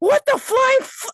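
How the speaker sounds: very high, loud, startled, shocked yell. Narrating the story, voicing Ronnie's startled reaction to the creature, yelling. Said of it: "why are you yelling in the corner?".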